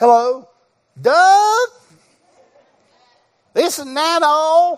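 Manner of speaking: put-on high, genuine Southern accent. Speaker recalling his southern grandmother calling him on the phone: real southern accent. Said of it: "I'm gonna give you how it sounded".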